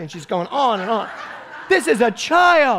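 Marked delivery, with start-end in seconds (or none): 1.7-2.8 very high, shrieked, drawn-out scream. Recounting how she screamed at the judges after he was cut, imitating her screaming. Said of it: "And she is going screaming".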